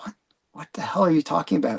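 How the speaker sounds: whispered, unvoiced, hushed disbelief.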